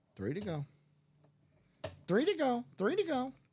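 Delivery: high, squawky parrot voice. Repeating the phrase just said, as a parrot impersonation. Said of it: "It's my parrot impersonation".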